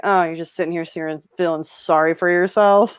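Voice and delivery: dry, scornful tone in a low, sardonic voice. Imitating a movie character scolding someone: imitating a low sardonic voice. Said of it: "how low and, like, sardonic his voice sounds".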